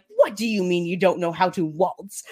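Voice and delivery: ordinary talk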